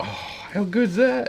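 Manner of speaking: high-pitched, delighted gushing voice. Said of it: "You're just like".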